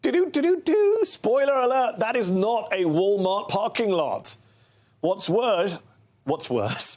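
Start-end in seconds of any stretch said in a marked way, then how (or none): 5.0-7.0 still laughing while speaking. Going back to the story right after a funny clip; still laughing. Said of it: "I'm still laughing about that clip".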